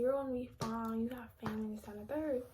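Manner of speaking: ordinary talk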